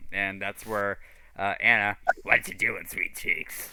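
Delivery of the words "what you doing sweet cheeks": smoker's voice, pitched lower. Recapping the campaign for the players, voicing Anna in a heavy-smoker voice. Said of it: "she had that voice that, like, I smoke 10 Pall Malls packs a day".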